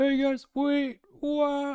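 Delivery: very high, very slow call, trailing away. Retelling a player falling behind while climbing: imitating Flat's voice fading into the distance. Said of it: "voice is just fading off in the distance".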